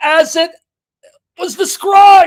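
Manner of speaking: high, loud, excited shout belted out.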